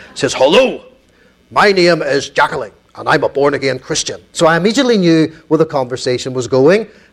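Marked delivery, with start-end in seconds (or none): 0.4-4.3 put-on full-strength Belfast accent. Retelling a call put through at East Belfast Mission, imitate Jacqueline's Belfast accent. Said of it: "Let me give you a Belfast accent".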